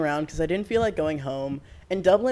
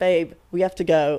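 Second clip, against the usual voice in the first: raised, loud voice with slight British lilt; 5 dB louder than usual. Retelling what her friends said, slightly British accent. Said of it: "That was a little more British".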